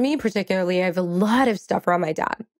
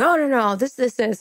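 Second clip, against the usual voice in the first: brusque, gruff, fatherly tone; 3 semitones higher than usual. Retelling how the speaker's dad came in objecting, imitating dad's gruff voice. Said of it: "very gruffly as he does saying".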